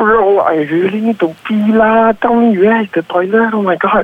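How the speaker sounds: high-pitched, urgent, desperate voice. Asked to sound really desperate to urinate in a scene, desperate to pee. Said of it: "sound like you're really desperate to urinate".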